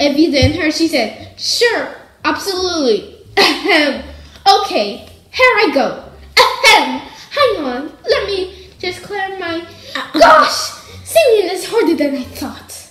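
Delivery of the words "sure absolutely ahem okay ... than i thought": higher, put-on smart-speaker voice assistant voice. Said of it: "Good impression".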